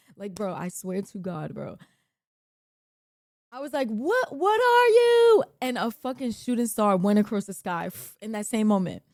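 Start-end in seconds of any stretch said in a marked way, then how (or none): 3.9-5.5 very high, drawn-out, shrieking scream. Retelling screaming at the night sky beside a friend, retelling a scream. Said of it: "That's what I screamed".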